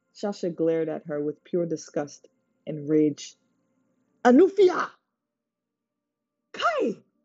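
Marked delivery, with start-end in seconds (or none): 4.2-6.9 piercing, shrill, very high screech. Orlu breaks into the argument, screeching. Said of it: "Orlu screeched".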